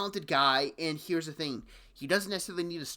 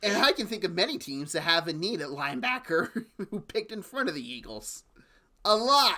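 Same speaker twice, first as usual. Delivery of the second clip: words breaking up into chuckles while talking; 3 semitones higher than usual. Pointing out that many teams needing a linebacker picked first, laughing while talking. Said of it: "sorry I'm laughing here".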